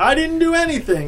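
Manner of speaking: very high-pitched yelling. The catcher answers the pitcher while they argue: yelling. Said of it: "yelled the catcher".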